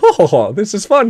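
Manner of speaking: put-on, high, loud goofy voice. During match commentary, act out what was said in a goofy voice. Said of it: "did that goofy voice".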